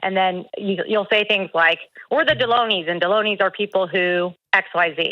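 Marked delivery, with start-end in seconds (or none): none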